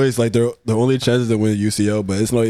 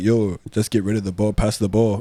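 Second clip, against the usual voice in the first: usual speaking voice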